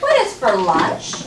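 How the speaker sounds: slow, rising at the end, pitch lifting on "lunch".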